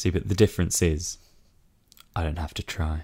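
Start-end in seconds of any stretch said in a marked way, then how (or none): 2.2-3.0 put-on husky, sexy, seductive voice. Answering a request for a sexy voice: put-on husky sexy voice. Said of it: "you husky minx".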